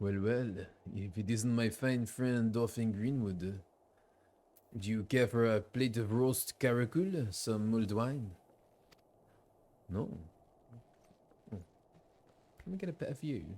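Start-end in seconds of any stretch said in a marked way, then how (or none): 0.0-8.3 put-on seductive, sexy French accent. Voicing Horsefall at a feast, greeting a guest: put-on sexy French accent. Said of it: "Let's try a sexy Frenchman".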